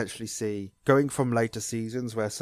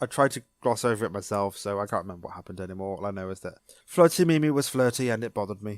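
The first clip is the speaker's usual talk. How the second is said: ordinary talk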